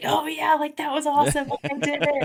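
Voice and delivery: high, happy, excited whoop.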